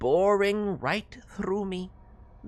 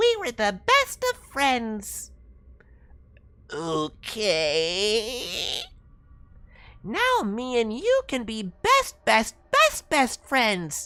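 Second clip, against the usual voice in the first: wheedling, buddy-buddy, high, loud, sing-song raccoon voice; 6 semitones higher, 5 dB louder than usual. A raccoon at the window asks to be let in: talking raccoon voice. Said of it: "and the other a raccoon standing on two legs. / he added".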